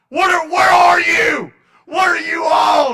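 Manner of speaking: put-on screaming. Retelling a father's reaction on the phone: imitating dad screaming. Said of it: "He started screaming into the phone".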